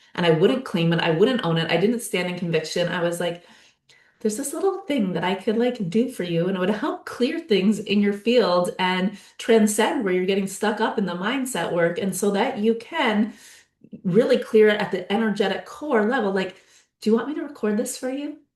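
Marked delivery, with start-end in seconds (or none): none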